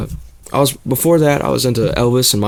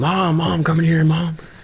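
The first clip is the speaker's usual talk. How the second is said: play-acted excited kid, high, urgent, calling out; 5 semitones higher than usual. Retelling calling a parent in to see the screen: retelling own screaming. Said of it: "I remember sitting there screaming".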